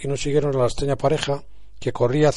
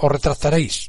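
violently, fiercely, vehemently insistent tone. Doña Sancha, having risen to face him, repeats her demand, insisting violently. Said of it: "insistió con violencia doña Sancha".

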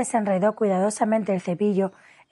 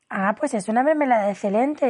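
ordinary delivery, nothing marked

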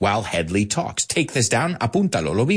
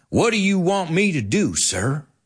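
attempted, put-on southern US accent; 4 semitones higher than usual. Retelling a line from a 1974 movie, trying his southern accent. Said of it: "I'm going to try to do my southern accent here".

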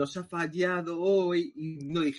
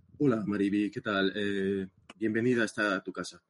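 put-on close, intimate interviewer voice; 9 semitones lower than usual. Welcoming a guest who is about to introduce herself: intimate interview voice. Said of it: "mi voz íntima de, de, de entrevistas".

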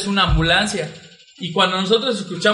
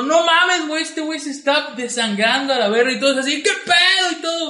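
mock startled, alarmed, high-pitched shocked yell; 7 semitones higher than usual. Recounting a story of blood after a punched window, retelling a shout. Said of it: "y nos gritó".

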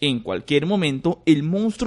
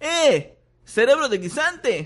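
very high, ringing shout; 10 semitones higher than usual. Ron calls to the creature from the other end, shouting. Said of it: "gritó Ron desde el otro extremo".

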